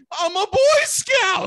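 slow, pleading, very high, drawn-out yell. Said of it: "Just yelling".

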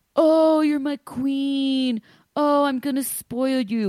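creepy fake sweetness. Mocking a fake nice guy talking to his partner: imitating Ed's fake niceness. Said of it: "Ed is a fake nice guy".

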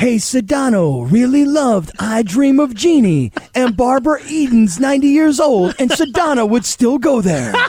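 promo announcer voice. Asked to, the speaker does Mario's promo voice for a Sedano and Cap promo. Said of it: "Do the promo voice of what Mario would do".

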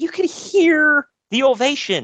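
high, slow, indignant voice.

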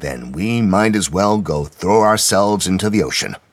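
usual speaking voice

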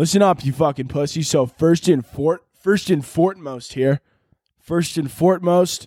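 southern frat guy military officer voice. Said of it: "a southern accent mixed with a frat guy voice".

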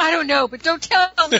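play-acted, high, exasperated, fed-up shouting. Retelling a frustrated park visitor yelling at staff: imitating someone yelling. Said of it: "she started yelling at them".

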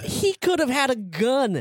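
high, slow, mock angry scolding tone. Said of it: "and he's like".

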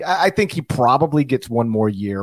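ordinary talk

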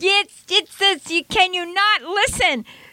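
high, slow, stern teacher voice. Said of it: "Remember that scene with Anne Bancroft".

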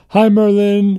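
high, loud, excited and eager tone. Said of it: "That was my [name] impression".

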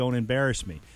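usual speaking voice

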